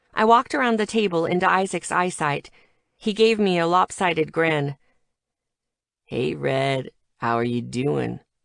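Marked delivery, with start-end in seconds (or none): 6.1-8.2 put-on slurring drunken words, lower. Reading a story scene, a drinking character greets a friend: slurred drunken speech. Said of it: "his words slurring".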